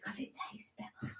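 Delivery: barely audible hushed whisper, very soft. Repeating a boy's answer to his mom, whispering. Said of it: "he whispered it as well".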